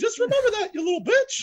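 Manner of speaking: nihilistic, put-on high cartoon mouse voice. Showing a comedy bit about a trauma trigger: nihilistic Mickey Mouse voice. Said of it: "I do a Mickey Mouse voice".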